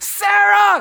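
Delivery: loud, high-pitched yelling.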